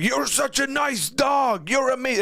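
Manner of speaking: put-on, very high scolding yell. Retelling how a man talked to his dog: retelling a yell at a dog. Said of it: "he was like yelling at it".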